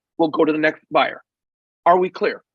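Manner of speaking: usual speaking voice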